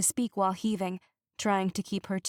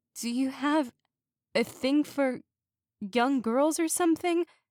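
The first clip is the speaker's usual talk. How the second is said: groggy slurring, words breaking apart, pitched up; 6 semitones higher than usual. Reading a story aloud where the girl fights to stay conscious: slurred words. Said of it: "her words were a bit slurred".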